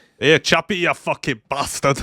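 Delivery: loud, clumsy, bad South African accent. Trying out accents with others, calling to Chappy in a bad South African accent. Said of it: "a lot of attempted South African accents".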